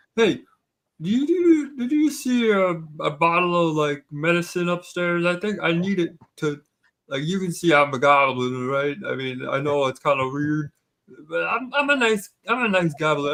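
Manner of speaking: put-on acted drunken speech. A goblin, told the museum is closed after hours, asks about his medicine, acting drunk. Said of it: "I've had a little too much to drink".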